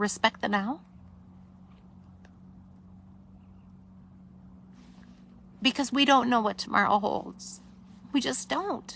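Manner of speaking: soft, tearful words, crying throughout. Host on Sunday Night Live, asking viewers to forgive the tears: crying. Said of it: "forgive me for crying".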